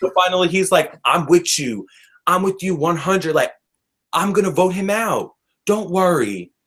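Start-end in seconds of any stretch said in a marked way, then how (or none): 1.0-6.4 put-on sweet-talking, charming Southern accent. Quoting him as he finally agrees with her, in his little Southern charm voice. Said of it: "In his little Southern charm voice".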